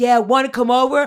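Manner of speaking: very loud, brash hollering. Retelling loud guys calling out to girls passing by: imitating guys yelling at girls. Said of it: "yelling towards these girls".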